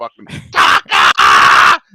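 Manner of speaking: screamed, very loud cheer. Retelling a cousin's reaction each time Taka came in: imitating someone screaming. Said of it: "my cousin was on top of his chair screaming".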